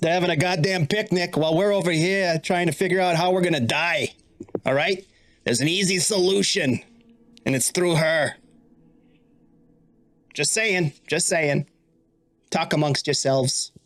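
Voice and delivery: small, devilish sidekick spirit voice. Voicing a little devilish spirit guardian urging the group to kill her: little devilish spirit guardian. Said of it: "one of your little devilish spirit guardians".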